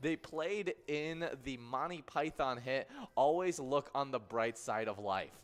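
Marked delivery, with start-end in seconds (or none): none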